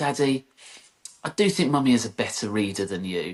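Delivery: ordinary delivery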